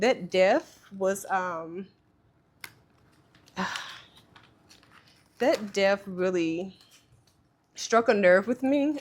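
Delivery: voice holding back tears. Speaker begins on traditions a man started for them, holding back tears. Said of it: "I'm about to start crying".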